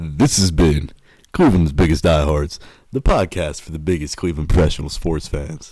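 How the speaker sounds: put-on radio announcer voice. Introducing the podcast to the others, in the speaker's radio voice. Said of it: "let me give you guys my radio voice".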